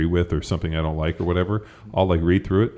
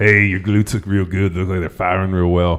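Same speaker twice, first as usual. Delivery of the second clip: mock-creepy creeper voice, louder; 2 semitones higher, 6 dB louder than usual. Acting out how a creeper would talk to someone, in a mock-creepy tone. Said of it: "I could be a creeper about that, and I think I could change the tone of my voice".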